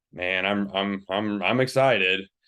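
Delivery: reluctant, contradicting, unenthusiastic, half-sarcastic tone. Showing how tone can contradict the words: reluctant, contradicting tone. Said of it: "almost having a tone kind of".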